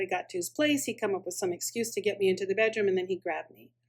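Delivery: plain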